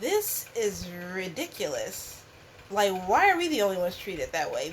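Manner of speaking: usual speaking voice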